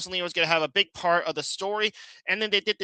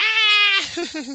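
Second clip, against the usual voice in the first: very high, loud squeal of pure excitement; 6 dB louder than usual. Retelling watching the movie with excitement: imitating own excited scream.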